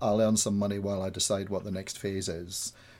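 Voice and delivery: ordinary talk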